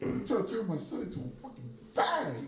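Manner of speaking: very high, slow, deliberate dad voice.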